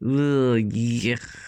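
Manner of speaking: groaning moan full of disgust and revulsion. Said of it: "everyone moaned".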